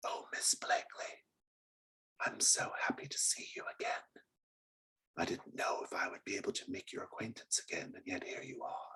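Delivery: hushed, soft, barely voiced whisper throughout. The narrator voices a character greeting miss blakely, in a whisper. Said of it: "she speaks to you in a whisper".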